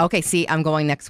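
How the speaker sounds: ordinary talk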